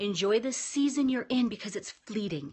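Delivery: ordinary talk, nothing marked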